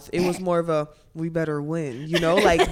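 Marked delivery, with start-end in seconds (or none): 1.1-2.1 barely-moving-mouth put-on voice, lower and slower. Asked for an impression of her, do a Dawn Staley impression, mouth barely moving. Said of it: "she didn't really move her mouth".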